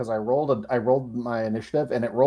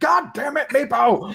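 very high, dragged-out angry scream; 11 semitones higher, 3 dB louder than usual. Acting out a future moment in the game: Calder screaming. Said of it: "the dulcet tones of Calder screaming".

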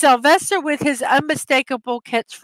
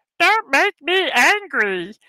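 cartoon martian voice, higher, slower; 3 semitones higher than usual. Running through his cartoon impressions, the speaker does a Marvin Martian voice. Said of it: "the best of my impersonations of them".

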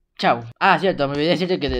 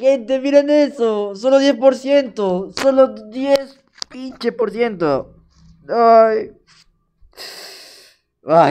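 whining, almost crying, despairing lament; 7 semitones higher, 6 dB louder than usual. A streamer who came so close, failing at only ten percent: whining, near tears. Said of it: "estoy llorando".

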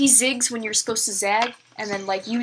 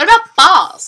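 put-on very loud, high, ditzy girl voice, blurted; 8 semitones higher, 13 dB louder than usual. Acting out a dumb girl at a fancy dinner party: acting a dumb girl. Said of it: "one really dumb, like, promiscuous girl".

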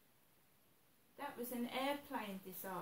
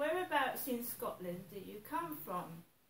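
ordinary talk

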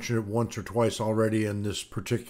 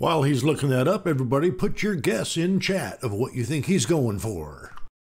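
corny, showy, cheesy game show host voice; 4 semitones higher than usual. Filling time for chat while the other person searches, cheesy game show host voice. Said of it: "that was my cheesy game show host voice".

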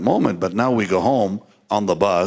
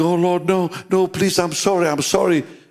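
play-acted tearful crying, pleading tone, pitched up; 10 semitones higher than usual. Recounting what they said to the lord when the feeling lifted, imitating own crying plea. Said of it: "And I began crying".

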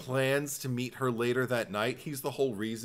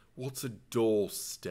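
contemptuous, scoffing, disdainful, scornful tone. Retelling a man's reply in Venice: imitating a disdainful reply. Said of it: "looked at me with disdain and said".

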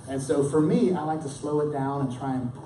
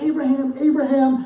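loud, raised, pitched-up crying out; 12 semitones higher, 14 dB louder than usual. Preaching to a congregation, voice an angel calling a man's name, crying out loudly. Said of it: "I think of this as a booming, loud, thundering".

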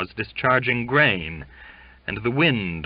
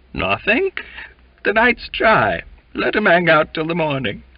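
strangely trembling, raised, held-back voice; 7 semitones higher, 5 dB louder than usual. Reading Duncan's reply to Waite, speak in a strangely trembling voice. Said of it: "in a strangely trembling voice, as though restraining laughter or rage".

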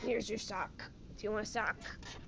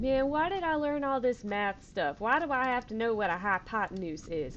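loud put-on American southern accent; 10 dB louder than usual. Quoting people the speaker has heard complain, done in a southern accent. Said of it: "I use a southern accent there".

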